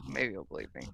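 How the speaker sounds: really quiet, very low, soft mumble under the breath.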